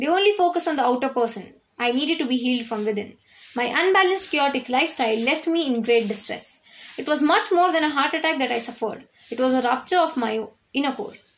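ordinary delivery

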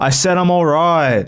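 aggressive, forceful voice. Describing how being tired makes them sound, acting out a reply: mock-aggressive, louder. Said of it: "you try to be louder and that comes off as more aggressive".

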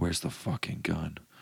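hushed, breathy whisper under the breath. Retelling being thrown onto a cop car, acting out the man's whisper. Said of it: "he whispers in the mirror".

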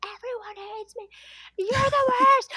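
frantic, possessed-sounding, shrill, high dramatic screaming. Retelling how he screamed at the speaker, imitating someone screaming. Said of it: "started screaming at me like a possessed person".

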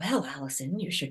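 hushed, even, very soft, calm radio-announcer voice. Describing a two-way conversation with her wise inner part, act out a calm radio voice. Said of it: "there's like this, radio voice. That's kind of calm".

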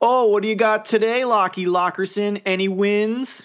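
high, slow, mock-friendly sarcasm, "wins" stretched out. Acting out greeting someone with a nickname: put-on sarcastic tone. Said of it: "I would use it sarcastically".

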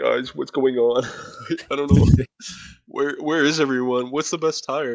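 put-on voice on the verge of tears. A co-host acts out Leclerc on the team radio, imitating him about to cry. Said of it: "it sounds like he's going to cry".

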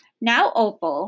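ordinary delivery

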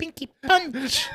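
very high, squeaky little voice. Recalling a line barely heard in the background, doing a high-pitched voice. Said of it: "you just heard a high-pitched voice go".

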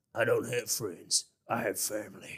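very low, deep, soft, hushed rumble, botched tough voice. Speaker quoting an actor's line about family, in a bad Vin Diesel impression. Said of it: "that was probably the worst ever Vin Diesel".

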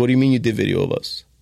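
put-on serious voice. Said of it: "He got real serious".

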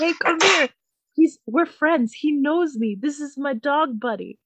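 calling out high and insistent. Retelling a man yelling at a neighbor's dog: imitating someone yelling. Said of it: "he keeps yelling at the dog".

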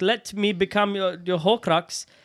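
put-on slight South African accent. Acting out a man's words in a story being told: slight South African accent. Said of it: "I just turned a little bit South African".

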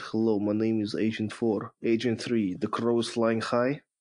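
put-on Russian accent in a spy style. Answering a robocall on loudspeaker, the speaker pretends to be a Russian spy. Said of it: "I pretend to be a Russian spy".

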